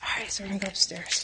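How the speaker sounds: sneaky, soft, hushed stage whisper. Touring a house the speaker isn't supposed to be in: half-whispering. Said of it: "I don't know why I'm whispering".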